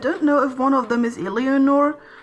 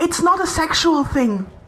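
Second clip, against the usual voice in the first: called out loudly, high pitch; 5 semitones higher than usual. Playing a character, calling to onlookers in an arena: shouting to people behind. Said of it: "shout towards the people behind us".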